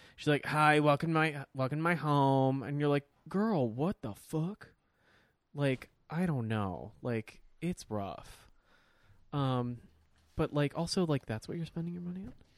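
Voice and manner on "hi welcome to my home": put-on grating voice, much slower. Mocking a woman welcoming viewers to her house, imitating a grating voice. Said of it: "her voice is grating".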